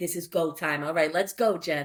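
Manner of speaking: ordinary talk, nothing marked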